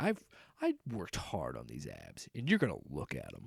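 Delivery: deep hushed swooping voice. Voicing a shirtless actor while watching the show with a spouse, deeper voice. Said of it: "I don't know why my voice got deeper".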